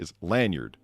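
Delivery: American pronunciation. Insisting on how the word is said: american accent. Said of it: "you're just saying it in an American accent".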